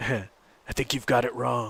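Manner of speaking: rough-edged, gruff voice. Quoting a line someone says in a movie, in a gruff voice. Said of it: "He says it in a gruff voice".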